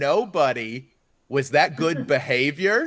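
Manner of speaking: slow, gentle, patient voice. Retelling how to talk to a seventeen-month-old son: imitating gentle patient parenting voice. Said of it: "be patient and use gentle language".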